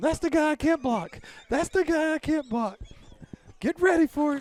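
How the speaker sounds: very high, loud frantic call. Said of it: "points at him".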